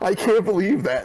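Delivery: worked-up, heated, high-pitched exasperated disbelief. Upset that a game list leaves out Spider-Man 2, heated. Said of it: "I'm sorry, I'm heated".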